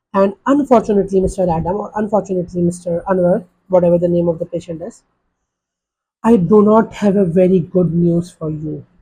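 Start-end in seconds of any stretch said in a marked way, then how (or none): 6.2-8.8 voice sinking low, falling tone. Telling a patient about a CT scan result, tone dropping lower. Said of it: "So you see my tone went further down".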